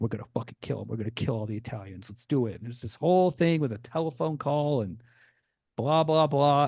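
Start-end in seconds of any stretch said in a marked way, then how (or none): 0.0-2.6 amped-up, hyped, pumped gangster bravado. Retelling a movie scene where armed men prepare to attack: imitating hyped-up gang members. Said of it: "all hyped up".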